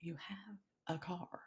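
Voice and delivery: slow, drawn-out, barely-there, hushed half-whisper. Recounting a night of yelling at god, retelling a half-whisper. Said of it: "it was like he whispered to me".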